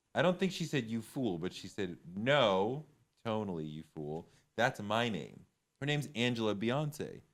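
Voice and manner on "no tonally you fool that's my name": put-on snippy, curt tone, slower. Recalling what a woman said, the speaker repeats her words in a mock-snippy tone. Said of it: "her tone was a little snippy when she was like".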